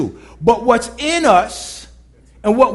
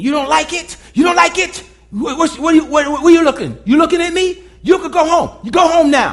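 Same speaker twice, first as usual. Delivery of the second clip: mock condescending shouting, higher; 4 semitones higher than usual. Recounting a construction coworker who yelled at the speaker, imitating a condescending yell. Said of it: "He spoke to me in a condescending, demeaning tone".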